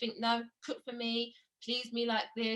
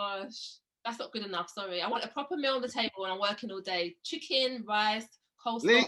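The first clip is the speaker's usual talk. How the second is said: normal talking voice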